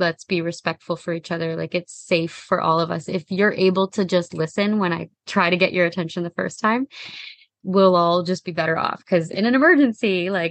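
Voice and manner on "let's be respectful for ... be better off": ordinary talk, nothing marked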